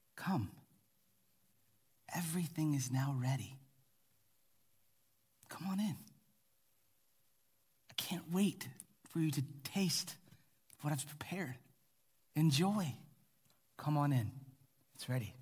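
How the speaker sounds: play-acted eager, joy-filled, joyful tone. Acting out the invitation in verse 17 for the listeners, voicing joyful eagerness. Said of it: "Do you hear the joy?".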